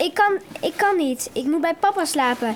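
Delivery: plain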